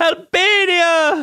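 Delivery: very high, loud shout. Retelling how a woman shouted her home country's name: shouted. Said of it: "It's like she's just like shouting it".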